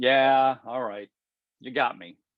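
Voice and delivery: sheepish, amused tone. Showing how someone answers being mocked: sheepish amusement. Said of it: "Maybe just some sheepish amusement".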